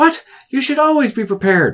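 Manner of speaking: scolding voice, pitched very high. Recounting a game scene, the mistress answers her unprepared servant, mock-scolding. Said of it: "mistress scolds unprepared servant".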